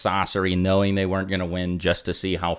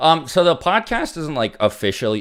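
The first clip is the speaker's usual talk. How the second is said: cracked, breaking voice, cracking up high; 8 semitones higher than usual. Answering a donor's question about another podcast episode, voice crack. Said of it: "My bad for the voice crack".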